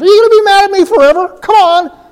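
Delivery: brazen, shrill fishwife voice, very high and loud. Paraphrasing a verse as the woman with hands on hips: imitating a fishwife. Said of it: "like a fishwife and says".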